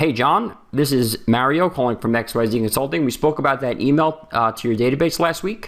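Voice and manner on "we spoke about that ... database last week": pitch rising at the end on the final word week. Demonstrating a phone call script line: rising pitch at the end on 'week'. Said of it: "leave it off on a high pitch at the end".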